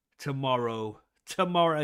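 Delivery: broad working-class English accent. Mentioning a contest that starts tomorrow, slipping into a common english accent. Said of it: "my common English come out".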